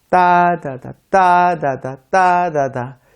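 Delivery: strong-weak alternating beats on 따다다. Describing English as stress-timed, mimicking its rhythm: strong-weak beat on 따다다. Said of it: "이런 식으로 음절마다 강약이 있어서 리듬이 있게 들리는 거죠".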